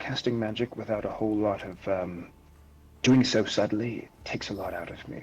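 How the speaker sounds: quietly muttered under the breath. Speaking in character at a table after ordering a drink: said under the breath. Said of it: "this is under my breath".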